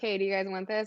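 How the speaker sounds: ordinary delivery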